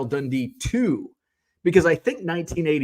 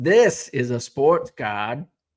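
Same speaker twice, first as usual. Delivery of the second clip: slow, shoddy, bad put-on Australian accent. Showing a sports card, speaker says a line in a bad Australian accent. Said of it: "my shitty Australian accent".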